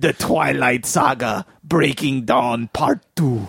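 put-on Russian accent. Repeating a movie title on request, Harrison Ford Russian accent. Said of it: "in my Harrison Ford Russian accent".

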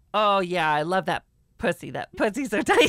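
words breaking into giggles, laughing throughout. Attempting dirty talk a second time: laughing while talking dirty. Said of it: "if you laugh while you're saying it".

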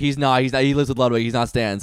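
normal talking voice

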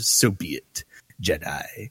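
low, slow, spat-out, venomous delivery. Retelling a scene, the speaker quotes Palpatine spitting words at a Jedi. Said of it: "he just spits out".

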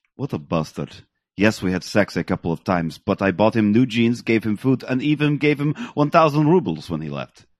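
put-on Russian accent. Quoting a woman's reply to police, imitating Zajac, Russian accent. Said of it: "I'll see if I can do this in a Russian accent".

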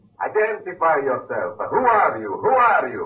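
put-on Italian-accented English, high-pitched. A sailor on a submarine's conning tower hails the others, Italian accent. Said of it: "That's an Italian accent".

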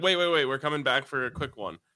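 normal talking voice

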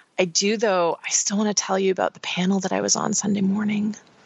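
hesitant, nervous, reluctant, half-afraid delivery. After a lame answer, still wanting to tell about a panel, hesitant as if afraid to tell. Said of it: "Why are you saying it like you're afraid to tell me?".

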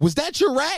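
very high-pitched yell, acted out. Retelling yelling at a stranger after a rat ran by: retelling a yell. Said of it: "Second thing I yell was".

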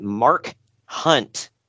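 deliberately slow, careful delivery. Answering a question about the opponent's name, said slowly. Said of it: "I got to say it slowly".

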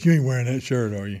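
put-on imitation of a woman's voice. Retelling a voice heard from the darkness when leaving: imitating Lisa's voice. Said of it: "That's how she sounded?".

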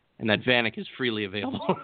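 normal talking voice

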